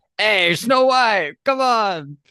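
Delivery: high-pitched, squeaky, drawn-out cartoon critter voice. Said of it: "Bradley Cooper, like, Rocket Raccoon voice".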